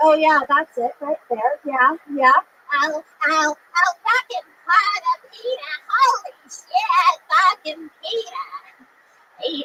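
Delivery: drawn-out cartoon housewife voice swinging up and down. Joking about turning into a cartoon character in bed: Lois Griffin voice. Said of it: "I turn into Lois Griffin when I come".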